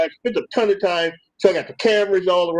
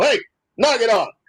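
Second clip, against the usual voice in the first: put-on stern dad voice, pitched up; 6 semitones higher than usual. Telling how they make him stop bouncing around, putting on the dad voice. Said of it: "put the dad voice on".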